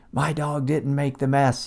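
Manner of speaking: put-on light shout, kept conversational. Retelling what the person with the dog said: imitating someone yelling. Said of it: "the person with the dog is yelling at me".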